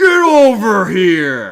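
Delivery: booming, very loud fighter shout, overstretched. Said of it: "now I gotta do it".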